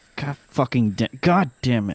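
put-on muttering under the breath. Retelling walking toward the town hall, re-enacting muttering to oneself. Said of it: "I'm just muttering to myself".

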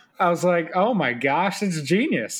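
ordinary talk, nothing marked

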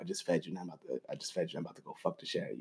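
soft, intimate, close whisper. Retelling what a partner whispered in his ear: imitating her whisper. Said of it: "she'll whisper my image and be like".

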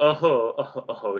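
put-on small laugh. Retelling a game scene, the speaker acts out Catherine's reaction: imitating Catherine's little laugh. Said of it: "That's just like a little laugh".

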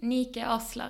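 name pronounced in a Swedish accent. Properly saying her own name when asked: Swedish accent. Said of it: "With a Swedish accent".

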